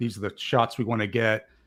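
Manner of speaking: ordinary talk, nothing marked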